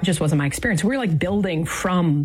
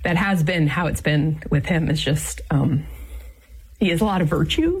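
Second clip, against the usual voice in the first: tearful, choked-up voice with emotion welling up. Speaker reflecting on marriage, getting teary. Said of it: "I'm getting teary".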